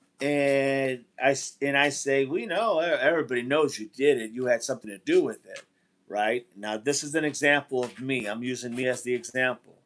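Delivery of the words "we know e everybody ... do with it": usual speaking voice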